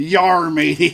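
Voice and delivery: loud put-on stock pirate voice. Retelling how a film extra did the pirate voice he was asked for: pirate voice. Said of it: "do a pirate voice".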